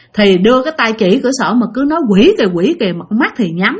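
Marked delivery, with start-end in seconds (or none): none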